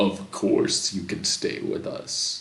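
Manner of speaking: voice dropped low and deep. Game narrator voicing someone inside the cabin answering, in a deep voice. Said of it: "You hear a deep voice coming from inside the cabin".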